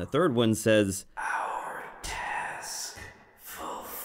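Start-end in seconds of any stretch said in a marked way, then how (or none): 1.2-3.8 faint, hissing whisper of a shadow creature. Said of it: "you can hear one of them whisper".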